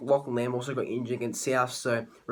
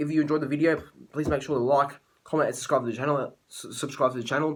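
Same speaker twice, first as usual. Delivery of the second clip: hurried, rattled-off delivery, words tumbling out. A YouTuber ending a tipping video addresses viewers, talking fast. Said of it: "sorry I'm talking fast".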